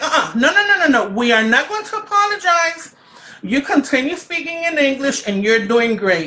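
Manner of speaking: put-on loud high call. Speaker recalls raising a hand and calling out from the back, retelling a loud callout. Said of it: "loud tone tone of voice".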